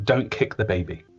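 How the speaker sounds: plain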